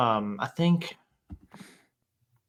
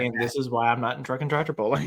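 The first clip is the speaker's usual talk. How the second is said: ordinary talk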